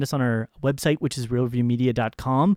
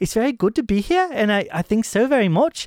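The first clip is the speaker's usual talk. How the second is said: put-on very British accent, pitched up a touch; 8 semitones higher than usual. Answering whether the character has an accent, imitating Claudia's British accent. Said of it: "she's British".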